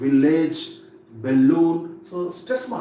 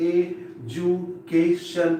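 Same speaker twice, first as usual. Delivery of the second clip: education split syllable by syllable, very slow. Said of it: "First you divide the word into syllables".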